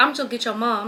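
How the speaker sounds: normal talking voice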